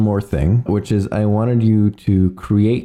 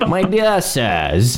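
posh British accent, pitched up, "sirs" stretched out; 5 semitones higher than usual. Discussing posh British accents, speaker offers a Nigel Thornberry impression. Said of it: "I was thinking like Nigel Thornberry".

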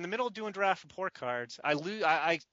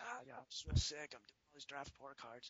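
very soft, very quiet, barely-there hoarse croak; 3 semitones lower, 13 dB quieter than usual. Retelling explaining being sick on speakerphone: imitating his own hoarse voice. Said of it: "He can barely talk".

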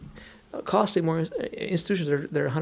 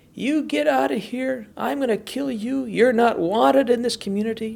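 mock scream at full voice, much higher; 7 semitones higher, 4 dB louder than usual. Retelling how a drunk man across the street screamed at the churchgoers, imitating his screaming. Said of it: "He started screaming at the top of his lungs".

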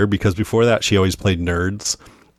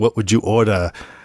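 put-on French accent. Retelling a movie scene, quoting the fancy restaurant's maître d' in a French accent. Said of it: "he speaks in a French accent".

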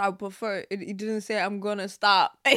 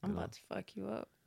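hushed, very quiet, seductive, menacing murmur; 14 dB quieter than usual. Asked to deliver a threat in a sexy tone: sexy tone. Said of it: "How you would say it, like in a sexy tone".

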